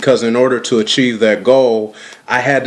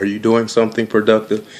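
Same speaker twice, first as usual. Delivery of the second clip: put-on sweet, gentle tone, delivered faster. Speaker recalling the question their mother always asked them, imitating mother's sweet tone. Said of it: "In her sweet tone of voice".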